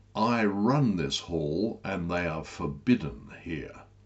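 ordinary delivery

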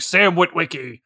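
very grizzled, gritty put-on voice. Recalling childhood movie visions, the speaker quotes a line in a very gristled voice. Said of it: "in a very gristled voice saying".

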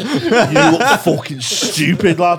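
slow, loud, mocking wind-up jeer.

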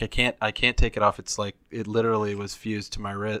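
normal talking voice

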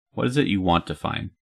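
plain

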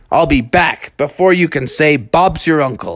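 ordinary delivery

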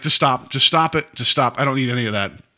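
normal talking voice

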